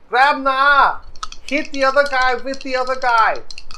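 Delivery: high, loud shouted call.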